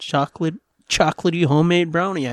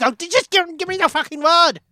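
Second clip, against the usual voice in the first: very high-pitched put-on German accent; 12 semitones higher than usual. Retelling a man's reply to a woman, in a put-on German accent. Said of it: "I don't know why he's German all".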